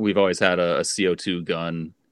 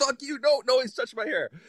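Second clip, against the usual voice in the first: mock furious, angry outburst, higher pitch. Retelling how a friend reacted when someone suggested scissors: imitating a furious friend. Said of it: "He's, like, so mad".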